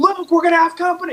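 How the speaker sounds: play-acted shrill, very high screaming. Recounting a movie scene, retelling a character screaming at Luke. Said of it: "and then he screams".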